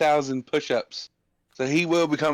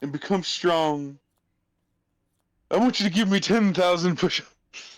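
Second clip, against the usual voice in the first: put-on tearful crying voice, higher pitch; 4 semitones higher than usual. Speaking in character as urged to, telling a student to train: crying in character. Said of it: "the cries".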